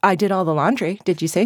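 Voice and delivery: normal talking voice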